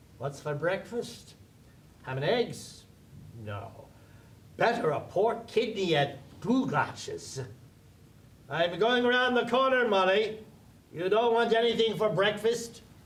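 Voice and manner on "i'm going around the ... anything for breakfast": loud, high-pitched call. Bloom calls up the stairs to his wife Molly: shouting up the stairs. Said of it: "(shouting up the stairs)".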